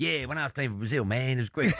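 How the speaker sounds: put-on American accent. Retelling a documentary dubbed in American: imitating Ronaldinho's American dub. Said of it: "answers in an American accent by going".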